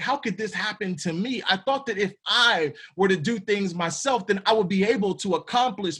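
ordinary talk

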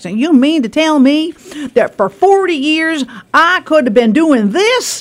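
put-on American southern accent. Quoting a man from a YouTube video, in a Southern accent impression. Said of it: "he's got a southern accent".

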